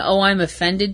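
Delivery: ordinary talk, nothing marked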